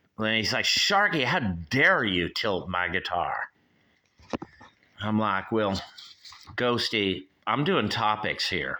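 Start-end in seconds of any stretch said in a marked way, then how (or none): 0.7-3.4 mock angry, indignant, pissed-off scolding tone. Acting out how he reacts when the speaker tilts his guitar; mock-angry. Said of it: "he gets mad and he gets all pissed off".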